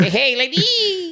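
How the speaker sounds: very high put-on high-low voice. Voicing an imagined gym ant greeting ladies: put-on high-low voice. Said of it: "He's gotta talk with a, a high low".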